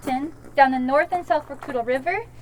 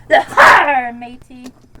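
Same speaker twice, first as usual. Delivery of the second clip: very loud put-on swashbuckling pirate voice; 2 semitones lower, 9 dB louder than usual. Teaching a group how to say a pirate greeting, put-on pirate voice. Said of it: "You have to talk like a pirate. ... This is how you say it".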